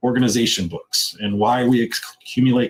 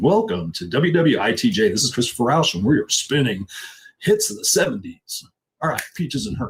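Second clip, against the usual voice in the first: put-on radio DJ voice, faster. Speaker jokes a sticky-note acronym sounds like a radio station: radio DJ voice. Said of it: "Sounds like a radio station".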